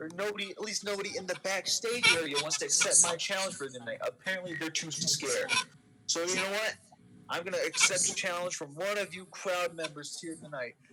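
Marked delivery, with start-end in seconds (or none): none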